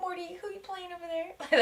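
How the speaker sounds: put-on high, soft baby voice.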